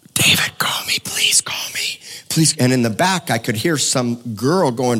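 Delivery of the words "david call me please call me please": whispered, breathy, mumbling begging plea. Retelling a man's voicemail message, imitating a man mumbling. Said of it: "this guy mumbling into my voicemail saying".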